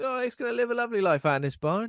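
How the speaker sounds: high, loud, bright, chirpy, mock-cheerful voice.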